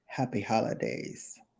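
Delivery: breathy, hushed, barely voiced delivery. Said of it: "with that [name] voice".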